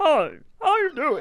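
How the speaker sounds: choking, blocked speech. Showing an impression of someone who swallowed an egg, choking, like swallowed an egg. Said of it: "do an impression of someone that swallowed an egg".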